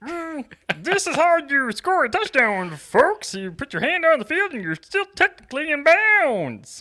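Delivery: very high, loud voice. Captioning a photo of a player scoring in his own voice: Patrick Mahomes voice. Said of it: "in his own voice".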